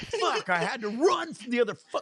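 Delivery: all-out, shrill yelling, pitched very high. Retelling a friend arguing with the boarding agent: imitating someone yelling. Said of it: "all yelling and shit".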